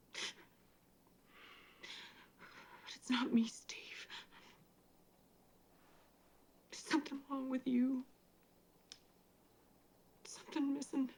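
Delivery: teary, sniffling, soft near-whisper. Speaking to Steve about his sweet talk and cheating, tearful and sniffling.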